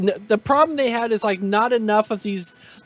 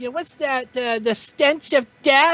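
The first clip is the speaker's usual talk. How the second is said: high, cartoonish comic-book antihero character voice; 5 semitones higher than usual. Imitating a movie character meeting Katana: Harley Quinn voice. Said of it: "that sounded like Harley".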